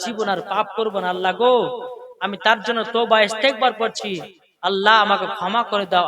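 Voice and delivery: soft, hushed, pleading and repentant delivery.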